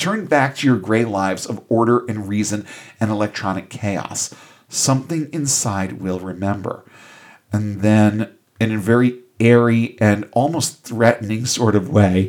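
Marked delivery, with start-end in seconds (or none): none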